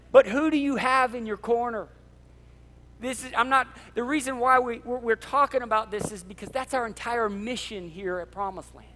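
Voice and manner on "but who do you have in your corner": fired-up, loud, high, passionate preaching-style yell. Speaking passionately about their mission and who is in your corner: yelling, fired up. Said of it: "and I'm yelling today".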